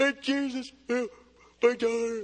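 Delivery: yawning while speaking. Speaker acting out a woman's plea to Jesus for an audience, yawning while speaking. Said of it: "See if I can make any of you guys yawn".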